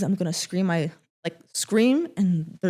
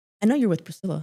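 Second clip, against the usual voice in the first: put-on smug, smirking tone. Retelling what a man at the gym said with a smirk: imitating a smug smirking tone. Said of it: "That smug ass smirk that he had".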